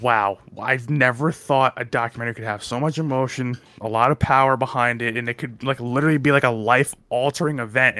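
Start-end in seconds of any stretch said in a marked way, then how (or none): none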